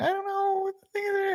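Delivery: wondering, voice jumping very high-pitched. Recalling how another speaker's voice went high: imitating Greg's high voice. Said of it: "your voice went high for a second there".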